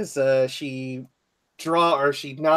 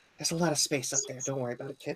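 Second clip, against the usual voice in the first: hushed, soft, leaning-in confiding half-whisper; 8 dB quieter than usual. A character leans close to another character and half-whispers. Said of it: "kind of whisper".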